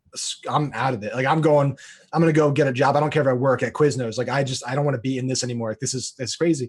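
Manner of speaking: ordinary talk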